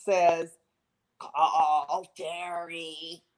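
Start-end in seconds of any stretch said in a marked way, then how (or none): 1.2-3.2 gargly, weird voice, much quieter. Retelling what a strange voice said on the phone, gargly and weird. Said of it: "a gargly, weird voice".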